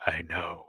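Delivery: whispered reply, soft. Voicing a healer who whispers a reply back: whispering in character. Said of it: "he whispers back".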